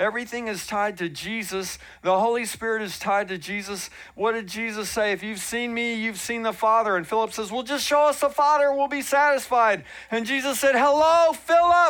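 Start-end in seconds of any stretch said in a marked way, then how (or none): 10.7-11.9 full-throated, very loud, high yell. The speaker retells Jesus answering Philip; yelling a retold line. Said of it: "I'm yelling".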